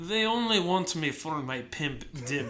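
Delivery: put-on Russian accent. Retelling the audio sample he made, the speaker repeats his line in a russian accent. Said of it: "I did it in a Russian accent".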